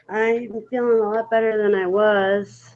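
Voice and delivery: weary, tired, soft voice with drawn-out "was". Asked how she is feeling, answering in a tired voice. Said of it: "You sound tired".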